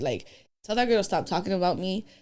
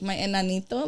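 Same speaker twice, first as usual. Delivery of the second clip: usual speaking voice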